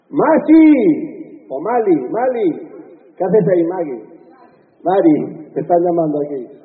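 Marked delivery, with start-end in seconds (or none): 0.2-1.1 very high, loud belted shout. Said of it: "No, otra vez".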